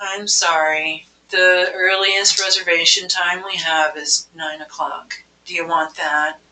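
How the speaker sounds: dreary, deflating voice, gloomy on every word. As a restaurant hostess offering a caller the earliest reservation time, in a Debbie Downer voice. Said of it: "sound like Debbie Downer".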